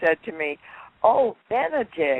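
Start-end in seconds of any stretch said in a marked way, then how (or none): 1.0-2.2 put-on small, girlish, high childlike voice. Retelling what Elizabeth Taylor said on first meeting: Elizabeth Taylor's childlike voice. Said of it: "she always had that childlike voice".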